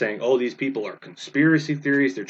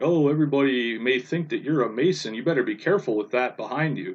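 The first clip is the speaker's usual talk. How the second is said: play-acted heavy sarcasm with feigned concern. Retelling a video refuting flat Earth, mock-sarcastic Justin Peters. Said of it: "is in a sarcastic tone".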